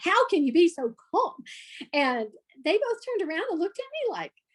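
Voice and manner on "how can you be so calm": loud, disbelieving, incredulous yell. Retelling how she yelled at two calm retired cops: imitating her own yelling. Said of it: "I just yelled at both of 'em".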